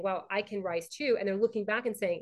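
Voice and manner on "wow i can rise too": ordinary delivery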